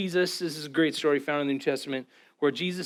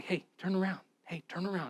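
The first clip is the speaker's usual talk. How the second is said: gentle, soft, repeated hushed half-whisper; 3 semitones higher, 9 dB quieter than usual. Preaching that he is always near, the speaker voices him calling after you, half-whispering. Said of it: "he's like whispering like".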